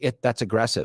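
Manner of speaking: plain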